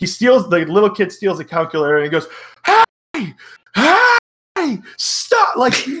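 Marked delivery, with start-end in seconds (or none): 2.7-5.6 play-acted, very high, swooping, hammy over-the-top outburst. Retelling a movie scene where a kid steals a calculator: imitating an over-the-top outburst. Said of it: "he just flips it to twenty".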